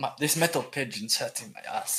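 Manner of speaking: put-on little mouse character voice. Voicing a character riding a metal pigeon: mouse accent. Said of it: "mouse accent there".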